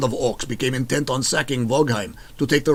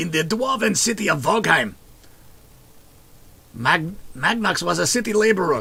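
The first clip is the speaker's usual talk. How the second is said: put-on strained, unconvincing Austrian accent, reaching high in pitch; 5 semitones higher than usual. Reading a character biography aloud in a game: attempted Arnie impression. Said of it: "I can't do the Arnie".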